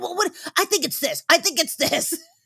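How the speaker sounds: mock shrill, insistent, pestering screaming, very high. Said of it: "screaming at me going".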